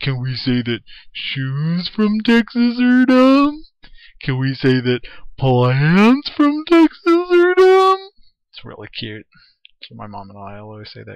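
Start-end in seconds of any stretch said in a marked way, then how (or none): 0.0-8.1 high, booming, loud, drawn-out, swooping cartoon voice. Describing a favorite SpongeBob episode and quoting a line in Patrick's voice. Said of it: "I can do Patrick's voice".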